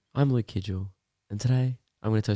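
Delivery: put-on soothing bedtime-story delivery. Retelling a recording for a calm sleep app: imitating a calm asmr sleep-story voice. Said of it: "you have to be like".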